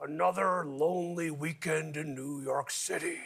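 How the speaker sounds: slow, hushed talk out the side of mouth. Retelling a line from a guy in the record store jazz section, talking out of side of mouth. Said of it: "spoke out of the side of his mouth".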